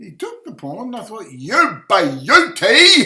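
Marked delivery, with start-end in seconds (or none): 1.3-3.1 very loud, booming shouted cheer, Australian accent. Commentating blitz chess as the opponent takes the pawn: shouted Australian accent. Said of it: "Using my Australian accent".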